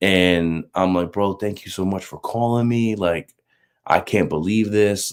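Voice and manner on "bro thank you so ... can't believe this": put-on tearful voice, quieter. Retelling thanking the caller on the phone, retelling crying on the phone. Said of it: "I'm in tears, I'm crying".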